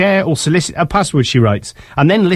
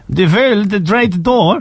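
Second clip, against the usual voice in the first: put-on Dutch accent, higher pitch; 5 semitones higher than usual. Reading a story about a Dutch animator, the speaker tries the name with a Dutch accent. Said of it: "Shall I try and do it with the accent?".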